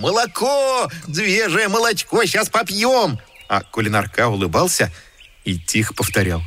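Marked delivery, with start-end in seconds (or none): 0.0-3.2 very high, excited, happy joyful chatter. The letters watch the cow being milked and cry out together: joyful clamor. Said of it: "Буквы радостно загомонили".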